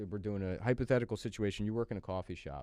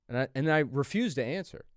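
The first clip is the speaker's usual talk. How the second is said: plain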